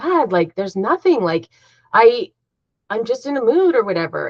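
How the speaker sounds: annoyed. Retelling how an ex-husband answered being asked what's wrong: imitating an annoyed ex-husband. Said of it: "he'd get so annoyed and mad".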